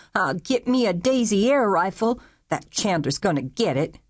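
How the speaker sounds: furious, enraged, livid. Aiden, his fright fading, speaks about Chandler, furious. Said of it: "was furious".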